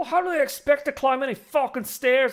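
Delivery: put-on poor Scottish accent, pitched way up. Imagining Scottish people's first reaction to men in pants, bad Shrek-style Scottish accent. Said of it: "I can't do a good Scottish accent".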